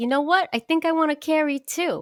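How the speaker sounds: put-on over-the-top New York accent, very high. Retelling what a partner said at the bar: exaggerated New York accent. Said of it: "I do her like she's the most New York accent in the world".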